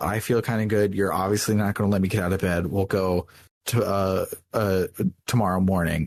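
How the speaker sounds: ordinary talk, nothing marked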